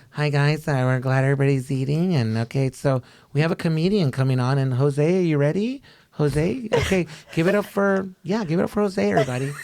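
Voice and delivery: put-on nervous delivery. Retelling how a coworker introduced him before his comedy set: imitating a nervous coworker. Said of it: "a nervous ass coworker who's just like".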